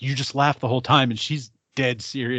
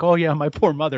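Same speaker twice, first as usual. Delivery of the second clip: put-on very sweet voice; 3 semitones higher, 4 dB louder than usual. Retelling what a girl said about her mother, imitating the sweetest voice. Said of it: "she just says it like the sweetest voice".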